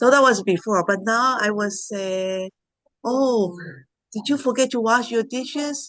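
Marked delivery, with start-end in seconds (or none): 3.0-5.9 friendly, nice, gentle, sweetened tone. A parent recalls how they speak to their son now: quoting self in a nicer tone. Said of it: "I say it in a more nice tone".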